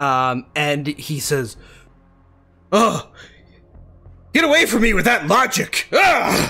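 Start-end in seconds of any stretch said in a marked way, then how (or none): 2.7-6.5 very high, loud, enraged, furious yell of disgust. Voicing an angry man rebuffed by logic: angry man shouting. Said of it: "with this, angry, angry man".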